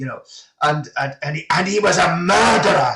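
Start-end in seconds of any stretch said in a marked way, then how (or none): 1.5-3.0 put-on passionate ranting voice, higher and louder. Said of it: "he would just say it with such passion".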